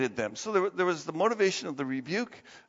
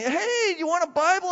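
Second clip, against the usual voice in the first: very high, eager, bubbly and excited; 12 semitones higher than usual. Speaker retells a man walking up offering a Bible, imitating an excited man. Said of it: "he's all excited".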